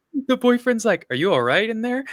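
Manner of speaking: high, clueless, oblivious voice, calling out.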